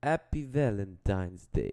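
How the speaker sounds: attempted Russian accent. Asked to do a russian accent, trying it out in a put-on russian accent. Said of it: "can you do a Russian accent?".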